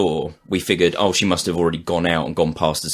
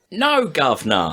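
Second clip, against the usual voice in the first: put-on English accent, higher; 10 semitones higher than usual. Adding to a joke about a friend hiding in the toilet: english accent. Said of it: "put on an English accent and said".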